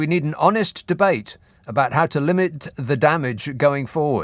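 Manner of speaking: normal talking voice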